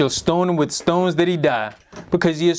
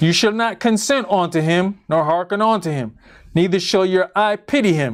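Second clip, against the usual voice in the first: plain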